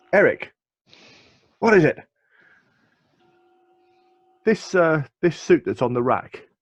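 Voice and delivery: calling out loudly. Voicing a character who turns and calls to a colleague: shouting to a colleague. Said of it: "he turns around and he shouts to his colleague".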